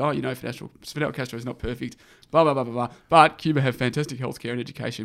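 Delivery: plain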